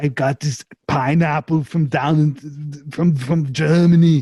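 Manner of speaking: slow, drawled, cartoonish Austrian accent. Improvising a character who got a pet pineapple from Germany: cartoon Arnold voice. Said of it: "just like a cartoon Arnold".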